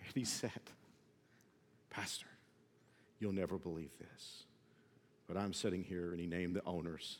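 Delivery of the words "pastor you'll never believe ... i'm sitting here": put-on tearful voice, lower, quieter. Retelling an agent's late-night phone call: imitating someone crying. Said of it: "there was a catch in his voice because he was crying".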